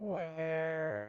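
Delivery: 'where' emphasized. Playing a speech-synthesis example, stress on 'where'. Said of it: "when he was emphasizing where".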